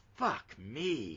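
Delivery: put-on well-done South Boston accent. Quoting a Boston DEA agent's catchphrase: Southie Boston accent. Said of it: "in a good Southie accent".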